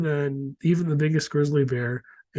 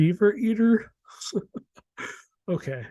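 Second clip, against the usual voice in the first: talking through laughter, words pitched up; 6 semitones higher than usual. Moving on to the next topic, laughing while talking. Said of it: "I'm sorry, I'm laughing".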